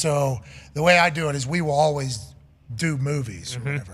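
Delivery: ordinary talk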